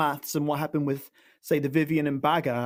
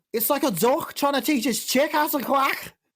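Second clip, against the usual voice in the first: very high attempted Liverpool (Scouse) accent; 10 semitones higher than usual. Asked to go one more time, speaker tries again in a Scouse accent. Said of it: "So this is my Scouse accent".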